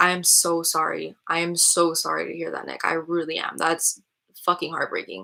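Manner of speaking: fighting tears, on the edge of crying. Responding to someone who lost a child, speaking while holding back tears. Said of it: "I'm trying not to cry right now".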